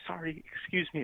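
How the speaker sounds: lightest possible voice, high, hushed, very quiet. Retelling squeezing past two people at a class door, in the lightest voice possible. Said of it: "in the like most light voice that I can".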